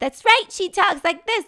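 very high, very loud screwball voice. Describing Ryan's first character in the film: high-pitched screwball Dee Dee voice. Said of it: "with a high-pitched screwball voice".

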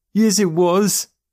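very high, loud hooting laughter. Narrator voicing a boy answering Joe after his trick, hooting with mirth. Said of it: "still hooting with mirth".

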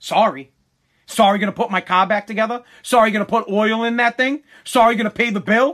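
stern father's scolding. Retelling how his dad answered an apology for a wrecked car: imitating his dad. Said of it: "Old man was like".

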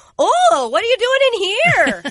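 attempted Swedish accent. Imitating a spy sneaking into a practice: attempted swedish accent. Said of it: "is that Swedish?".

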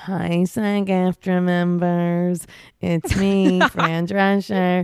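very slow, deliberate, stretched-out, drawn-out delivery. Retelling a video of the union president greeting members: Fran Drescher voice. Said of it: "and she's like".

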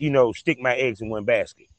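ordinary delivery

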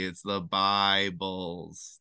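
"the Bibles" said very slowly, drawn out. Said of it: "when you say their name slowly".

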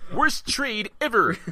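very high, shrill, blaring, belted out. Joking with others about how a character should sound, doing a Comic Book Guy voice. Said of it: "I want to sound like the comic book guy".

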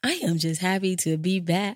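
smiling voice while speaking. Podcast host welcoming listeners back, speaking while smiling. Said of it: "I am smiling, and I don't know if you can hear it".

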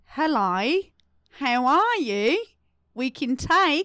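put-on Australian accent, leaning on the I. Asking another speaker to name the accent, the speaker performs an Australian accent. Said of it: "That's Australian".

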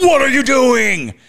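sudden startling shout, very loud, shrill and high. Retelling a voice backstage shouting at someone dripping paint, retelling a loud shout. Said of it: "louder than anything, just shouts out".

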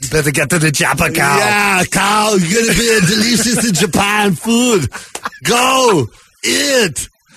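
fumbling, bad put-on Japanese accent. Voicing a Japanese guy, bad Japanese accent, Arnold Schwarzenegger-ish. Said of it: "How are you bad at that accent?".

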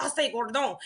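imitated French accent. Retelling how a freshman sister called out a name: imitating a french accent. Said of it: "she was talking like this the whole time".

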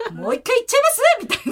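high, swooping, play-acted giddy, carried-away enthusiasm. Retelling own reply to the midwife's praise during birth: imitating own excited tone. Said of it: "本当にそのテンションですか？".

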